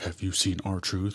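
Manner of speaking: slow mock robot voice. Recapping a backstage segment, quoting John Cena, in a robot voice. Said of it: "he says it like a robot".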